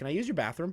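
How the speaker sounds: put-on nonchalant tone. Retelling what he asked at her door: imitating a nonchalant ask. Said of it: "Just very nonchalantly".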